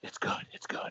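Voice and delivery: hushed, very soft, breathy whisper. Retelling a family story, quoting a man whispering after guzzling two eggnogs. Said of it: "he whispers".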